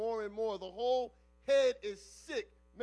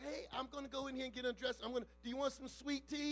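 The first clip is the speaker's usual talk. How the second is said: put-on soft, small, childlike little girl voice; 3 semitones higher, 7 dB quieter than usual. Retelling what the little girl's voice says to the man: little girl voice. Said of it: "the little voice of the little girl is like".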